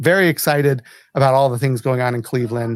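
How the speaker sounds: plain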